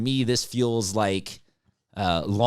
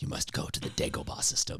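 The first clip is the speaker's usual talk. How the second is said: breathy, whispered, floating, otherworldly voice. Joking that an absent cohost is a floating voice: Obi-Wan voice. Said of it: "he's our Obi-Wan".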